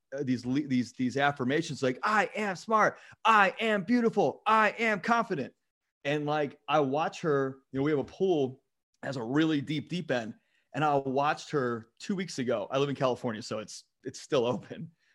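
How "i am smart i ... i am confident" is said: proud, triumphant, high, drawn-out empowered shout. Retelling a three-year-old at the mirror: imitating a child screaming, empowered. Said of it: "screaming at, at the mirror, like, empowered".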